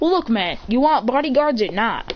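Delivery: ordinary delivery, nothing marked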